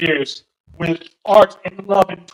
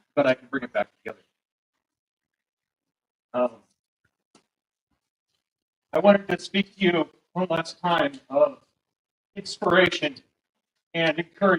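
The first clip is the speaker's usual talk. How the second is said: soft, moved voice, regaining composure; 6 dB quieter than usual. Speaking to the court one last time, emotional. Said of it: "I'm a little emotional right now".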